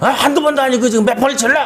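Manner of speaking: high, fast angry yell.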